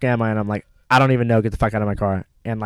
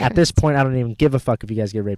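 ordinary delivery

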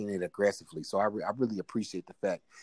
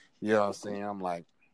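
ordinary talk

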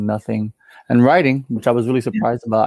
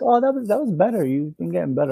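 play-acted, sweetly sassy tone, pitched up; 8 semitones higher than usual. Retelling a backhanded compliment after seeing the band: imitating her sassy remark. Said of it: "she was sassy".

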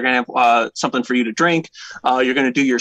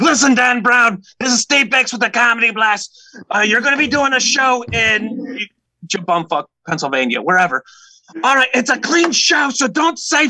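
very high-pitched put-on voice; 9 semitones higher than usual. Retelling a phone call booking a comedy show, Steve Bix voice. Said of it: "I got to do it in his voice".

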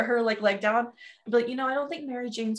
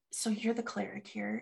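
hushed, low, very quiet, barely audible half-whisper; 2 semitones lower, 9 dB quieter than usual. A character kneels down and asks a question: low half-whisper. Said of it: "kind of just says it like in a low whisper".

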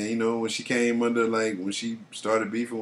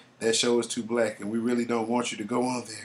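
put-on hushed whisper. Recounting what a star's representatives told their client, retelling a whisper. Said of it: "you have to do it in the whisper".

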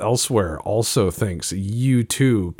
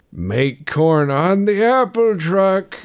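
put-on very high, loud elderly old man voice; 10 semitones higher, 5 dB louder than usual. Covering a fumbled saying by slipping into an increasingly older voice. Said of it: "I just start saying it in an older and older voice".

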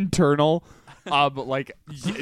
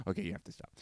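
hushed, very soft, barely-there whisper; 8 semitones lower, 16 dB quieter than usual. Retelling telling a friend at his house to stop: retelling a whisper. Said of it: "I just whisper".

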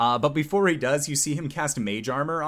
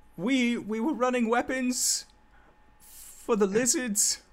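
frightened, in a very high voice; 10 semitones higher than usual. Voicing a surrendering crewman answering after intimidation: scared. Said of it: "he's scared shitless right now".

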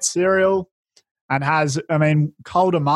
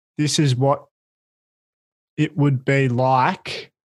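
slowed-down, lower speech; 2 semitones lower than usual. Counting each word aloud and deliberately starting to talk slower: speaking slower. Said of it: "I am going to start to speak slower".

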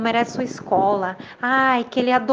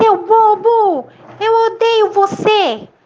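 very high, furious shout with "bobo" stretched out; 10 semitones higher, 8 dB louder than usual. Angry at a voice that never appears, the boy shouts again angrily. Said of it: "o menino com raiva gritou".

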